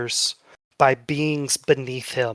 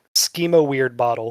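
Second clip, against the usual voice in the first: ordinary talk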